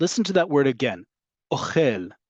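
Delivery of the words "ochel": ochel, rising stress on last syllable -chel. Repeating a word to show default milra stress: stress on last syllable of ochel. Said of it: "Ochel goes up at the end, right? That's that milra we talked about, where the default is on the last syllable".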